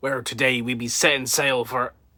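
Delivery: swashbuckling put-on pirate voice. Opening a video, the speaker talks in a pirate voice. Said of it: "I was talking like this at the beginning".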